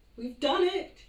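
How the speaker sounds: shrill, very high, very loud trembling voice. A narrator reads a man's line after the plane takes off, in a quivering voice. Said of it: "he said in a quivering voice".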